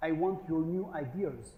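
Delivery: slow, very bad put-on French accent. Quoting a newly joined French CEO, in a bad French accent. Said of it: "That's a very bad French accent".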